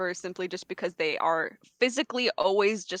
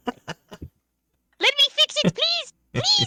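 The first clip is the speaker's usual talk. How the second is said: very high, swooping, overacted frantic pleading; 4 dB louder than usual. In a tabletop game, a kobold rogue begs to fix a trinket, pleading kobold voice. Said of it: "- a Kobold Rogue named [name] who became a witchlight hand to try to find their lost ability to keep a secret / - a Kobold Rogue named [name] who became a witchlight hand to try to find their lost abi".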